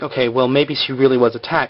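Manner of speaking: usual speaking voice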